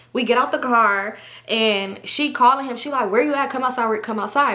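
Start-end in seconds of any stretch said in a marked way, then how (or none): none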